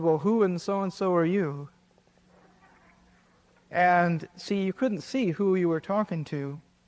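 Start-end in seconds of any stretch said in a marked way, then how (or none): none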